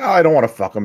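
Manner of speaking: mock high, sad, small little voice. Retelling a scene where a character answers the boyfriend, imitating a sad reply. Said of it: "and he gets all sad".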